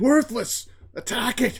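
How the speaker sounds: frantic, panicked, very loud, very high yell. Calling to a cowardly imp servant in a panic: panicked shout. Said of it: "In a panic, I'll shout".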